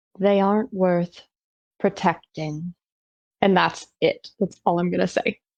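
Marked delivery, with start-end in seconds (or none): 0.2-2.8 very slow, deliberate delivery, lower pitch. A player, still watching her, makes a persuasion attempt very slowly and deliberately. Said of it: "I'm just going to say very slowly and very deliberately".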